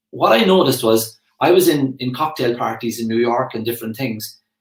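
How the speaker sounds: plain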